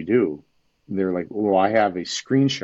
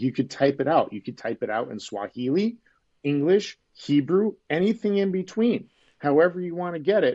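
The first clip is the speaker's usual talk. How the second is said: mildly sarcastic, pitched-up voice; 8 semitones higher than usual. Recounting getting a little sarcastic with someone: retelling a sarcastic remark. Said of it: "then I started getting a little sarcastic".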